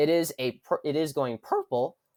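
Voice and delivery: voice cracking partway through. Predicting which party wins each state, voice cracking. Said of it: "voice crack, voice crack".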